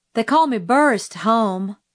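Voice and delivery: ordinary talk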